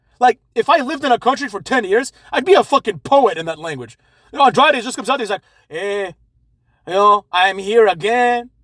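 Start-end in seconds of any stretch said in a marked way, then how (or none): 5.7-8.5 put-on very drawn-out, lazy-sounding Spanish accent. Imitate Andrade as he just comes out, in an Andrade impression with a lazy Speedy Gonzalez accent. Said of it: "he talks like fucking Speedy Gonzalez. He has that same accent".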